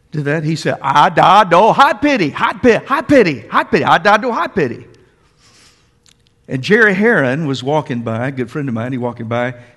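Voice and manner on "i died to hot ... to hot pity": mock exasperated, loud, high, repeated over and over. Retelling how he repeated his words when asked again: imitating Donald, exasperated. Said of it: "And he got exasperated".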